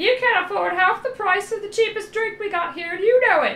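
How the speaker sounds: odd put-on bird voice, very high, shrill, loud. Voicing a bird character in a game, answering Mouse, weird bird character voice. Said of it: "I'm giving this bird this, like, weird voice".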